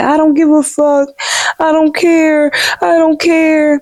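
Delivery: mock very high, tearful crying outburst. Recounting what a woman cried to a man, imitating her crying. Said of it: "She's crying to Tommy like".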